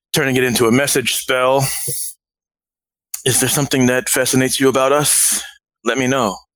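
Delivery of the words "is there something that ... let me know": whispered, in a put-on character voice. Casting a message spell at a staring guy, whispering in character. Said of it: "I point my finger in his direction and I whisper".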